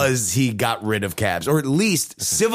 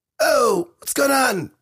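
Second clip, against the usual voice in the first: very high, pitched-up voice; 13 semitones higher than usual. Doing an impression of Mike T V imitating Justin: imitating Mike T V. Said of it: "This is my impression of Mike T V doing Justin".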